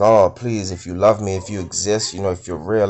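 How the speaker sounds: acted tearful, crying delivery. Retelling a desperate prayer to God while crying profusely: reenacting a tearful plea. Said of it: "I'm crying profusely".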